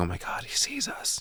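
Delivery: barely audible, hushed, breathy whisper. Retelling a scene where Chris hides from Johnny: imitating a whisper. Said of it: "we hear Chris whispering".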